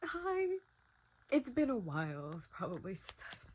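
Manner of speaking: crying through the words, tearful, high, swooping. Greeting viewers after a while away, speaking while crying. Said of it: "I'm crying. I don't know if you can tell".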